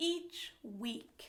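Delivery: plain reading voice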